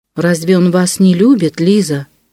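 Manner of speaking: ordinary delivery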